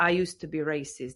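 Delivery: ordinary delivery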